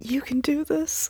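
soft, high, gentle whisper, close to the ear. In a tabletop game, a player speaks into an ally's ear, whispering. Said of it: "I'm going to whisper in his ear".

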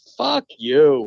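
cool, calm, even-toned, unbothered voice. Telling a story, the speaker acts out the girlfriend's reply to the lady: retelling a calm yell. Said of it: "yell "fuck you" back nice and calmly".

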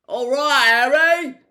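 booming giant voice. Reading a story where Hagrid calls back across a platform, bellowing. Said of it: "Hagrid bellowed back".

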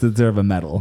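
ordinary talk, nothing marked

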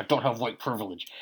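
very quiet hushed words forced through clenched teeth. Telling how Trevor snapped during a talk with Chris, imitating Trevor talking through teeth. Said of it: "you ever hear somebody like talk through their teeth?".

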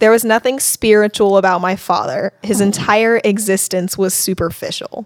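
usual speaking voice

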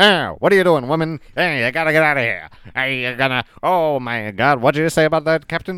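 put-on old-fashioned 1950s TV show accent. Describing how everyone talks on old shows, in 1950s tv show accent. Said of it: "that's like a 50s TV show accent where everyone's like".

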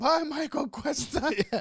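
piercing, very high scream. Retelling screaming goodbye at a man escorted out by police, retelling a scream. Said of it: "I start screaming at him".

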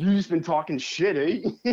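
odd put-on Baltimore accent. Imagining how a man will talk to you next time, in a put-on weird Baltimore accent. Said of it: "He's going to talk to me in that weird accent".

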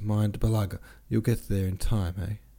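ordinary delivery

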